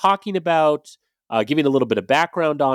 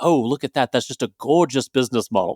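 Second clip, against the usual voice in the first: horrible, unconvincing put-on Australian accent. Imagining grabbing guests' arms to admire a business model: Steve Irwin voice. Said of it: "in my best Steve Irwin voice".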